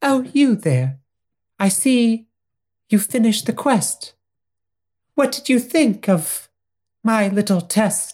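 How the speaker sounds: high, prim, proper British princess voice. Describing the princess, the speaker performs her lines: high British princess voice. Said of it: "It's higher and British".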